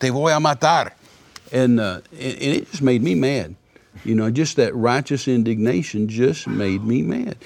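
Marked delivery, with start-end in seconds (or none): 0.0-0.9 mock high-pitched threatening scream in Spanish. Retelling how a gunman in the car threatened him: imitating a screamed threat. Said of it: "he screamed at me and said".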